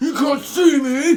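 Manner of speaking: very loud, high, drawn-out shout. Joking about not seeing an actor in the film: John Cena impression. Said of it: "That's my John Cena impression".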